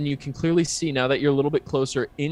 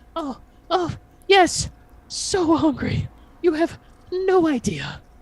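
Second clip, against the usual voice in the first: very high-pitched, pitched way up character voice. Answering the player who asks if they're hungry, very high-pitched voice. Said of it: "it's a very high pitched voice goes".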